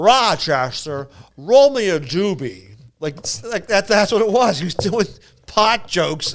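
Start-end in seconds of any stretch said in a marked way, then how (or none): 0.0-2.7 put-on slow, drawn-out old-school comic voice. Retelling a comedian's dated bit: Jack Benny impression. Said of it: "a Jack Benny impression".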